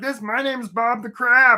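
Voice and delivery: high, slightly strange voice. Telling a crab story, voicing the crab Bob: Bob the Crab voice. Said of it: "That's his voice".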